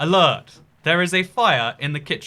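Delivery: calm, calming put-on British accent. Describing a device's fire alert, imitating its nice calming british voice. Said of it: "It's a really nice British voice".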